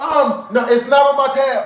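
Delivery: sudden, blurted-out exclamation. Retelling his own answer to the order: retelling his own quick exclaiming. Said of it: "very, very, very quickly exclaim".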